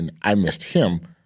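ordinary talk

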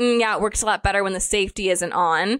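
ordinary talk

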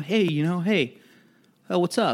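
slick, easy, smooth-talking businessman charmer voice. Imitating a business guy who comes in: imitating a smooth-talking business guy. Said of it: "they come in when they're smooth talking".

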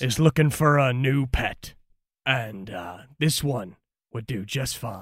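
frog-person pirate character voice. Voicing a bullywug asking a player a price: bullywug pirate voice. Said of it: "one of them looks at you and goes".

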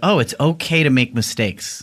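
normal talking voice

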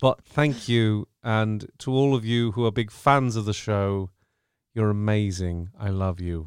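slow, affected, put-on British accent. Playing an actor thanking fans: put-on British accent. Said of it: "You do sound like someone".

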